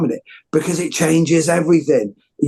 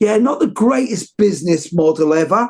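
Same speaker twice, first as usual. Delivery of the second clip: put-on light London Cockney accent; 3 semitones higher than usual. Retelling what a man said to him, put-on Cockney accent. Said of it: "I'll put on a bit of a Cockney accent".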